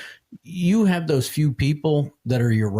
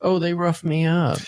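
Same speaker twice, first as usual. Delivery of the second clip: put-on high, babyish crybaby whine; 6 semitones higher than usual. Mocking a suspect who complains about his arrest: imitating a suspect whining like a baby. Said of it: "whine like a little baby".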